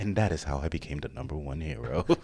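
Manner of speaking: soft, silky smooth voice. Joking about Bakugo doing vocal exercises, in a silky smooth Bakugo voice. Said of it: "why you get all silky smooth on us?".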